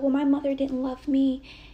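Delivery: shrill, very loud screaming. Recounting a woman screaming at the speaker: retelling her screaming. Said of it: "she's screaming at me".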